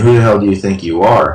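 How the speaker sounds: normal talking voice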